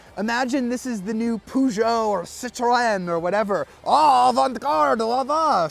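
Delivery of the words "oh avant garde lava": bad fake French accent, loud and high. Explaining a car's design by imagining it were French: bad French accent. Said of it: "Sorry for my bad French accent".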